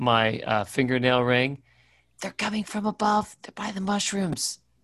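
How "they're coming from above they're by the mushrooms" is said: high, hushed half-whisper. Warning an ally through a ring about creatures above: half-whispering. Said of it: "I'm gonna whisper in my".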